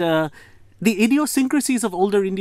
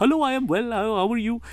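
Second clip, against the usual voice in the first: accent from India; 4 semitones higher than usual. Showing a simple joke accent: put-on Indian accent with hard T's and D's. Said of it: "just do T's and D's".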